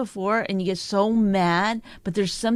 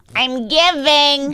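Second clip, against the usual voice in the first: mocking put-on voice, higher and louder; 6 semitones higher, 8 dB louder than usual. Imitating the partner giving gifts in a changed, mocking voice. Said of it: "don't change your vo-".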